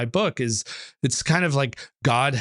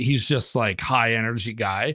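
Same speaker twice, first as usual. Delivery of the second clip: ordinary talk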